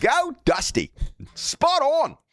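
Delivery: put-on Australian accent. Thanking a viewer for an Australian donation, in an Australian accent. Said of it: "I got to do my Australian accent now".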